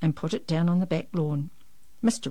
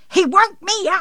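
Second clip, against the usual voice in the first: very high, very loud, shrill shriek; 14 semitones higher, 10 dB louder than usual. A woman at her bedroom window, having thrown a hairbrush: screaming. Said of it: "she screamed".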